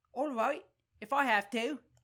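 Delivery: put-on, high-pitched Cockney accent. Voicing a woman questioned in court, the speaker uses a high-pitched cockney accent. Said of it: "Giving her kind of like a high-pitched, like, Cockney accent".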